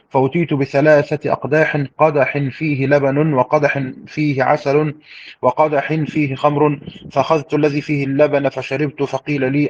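ordinary delivery

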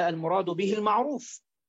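ordinary talk

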